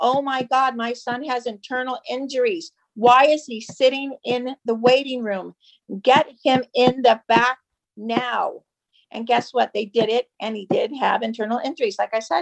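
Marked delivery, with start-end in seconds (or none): none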